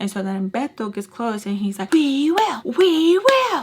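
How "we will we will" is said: very slow, booming, high, really loud drawn-out shout. Retelling a fight, the speaker quotes Beto getting close: retelling a loud shout. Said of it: "Like really, really loud".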